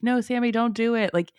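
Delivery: high-pitched put-on scream, swept up in it. Retelling how listeners react to a story: imitating someone screaming. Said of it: "even screaming, like".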